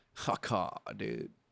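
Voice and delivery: slow, drawn-out drawl with stretched words. Repeating looked-up surfer slang as once said, drawn out slowly. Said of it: "said it slowly, like".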